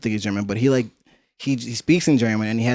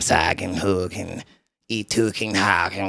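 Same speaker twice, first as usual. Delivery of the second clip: put-on creepy raspy voice, much slower; 4 semitones lower than usual. Describing how a german speaker talks, mimicking him: imitating a raspy, creepy voice. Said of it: "creepy mm".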